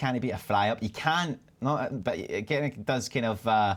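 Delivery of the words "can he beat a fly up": plain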